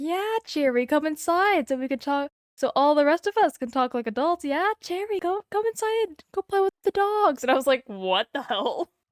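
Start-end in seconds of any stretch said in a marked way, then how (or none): 0.0-7.4 creepy, sugary, sinister coaxing voice, pitched up. Retelling how someone kept calling her inside, mock-creepy luring voice. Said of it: "made it sound like I was about to get kidnapped".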